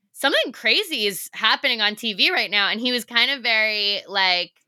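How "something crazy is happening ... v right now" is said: plain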